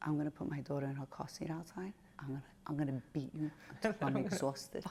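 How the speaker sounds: trembling, very hushed, menacing whisper. Retelling whispering a threat in a lady's ear: retelling a shaking whispered threat. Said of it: "I was fucking shaking and whispering".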